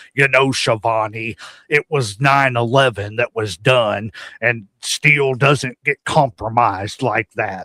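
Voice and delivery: put-on deep wrestling announcer voice. Imitating what Jesse Ventura will say on the show: Jesse Ventura impression. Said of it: "he's gonna be sitting there going".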